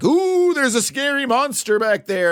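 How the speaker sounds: very high, scoffing, mocking put-on fright. Retelling a dismissive dad checking a closet: imitating a mocking dad. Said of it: "in a very mocking fashion".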